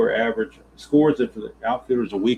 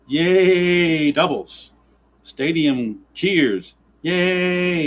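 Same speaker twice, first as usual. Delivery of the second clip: very slow, high, stretched-out cheer, "yay" drawn out; 7 semitones higher than usual. Cheering a run of doubles in a simulated game: RJL impression. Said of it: "I'm doing my best R J L impression".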